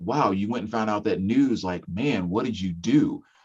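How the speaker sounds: ordinary delivery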